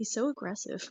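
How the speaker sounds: whispered aside. Whispering a remark to a companion in the game: whispering in character. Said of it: "I lean over to Visrar and I whisper".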